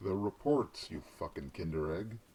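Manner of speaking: very low, put-on tough-guy voice. In an office scene, a character demands the reports, in a put-on tough guy voice. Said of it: "had to put on like a tough guy voice".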